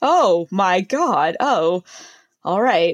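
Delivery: mock disgusted, reluctant tone. Retelling how a sales associate reacted: imitating a disgusted sales associate. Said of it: "The disgust, like, rolled through her body".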